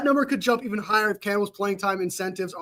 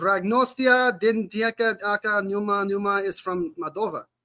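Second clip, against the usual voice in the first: put-on accent, part Spanish, part Russian. Reading a name from the comments aloud: put-on spanish and russian accent. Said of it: "I tried adding a accent to it".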